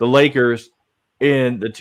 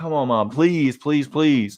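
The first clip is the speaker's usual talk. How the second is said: mock, pleading, begging child's voice; 4 dB quieter than usual. Retelling asking his mom for shoes for Christmas: imitating himself begging. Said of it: "I remember begging my mom".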